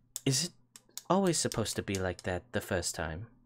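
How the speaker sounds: leaning-in theatrical stage whisper. Playing a character in a tabletop game, leaning in close to ask: half-whispering. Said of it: "lean in real close to you and whisper".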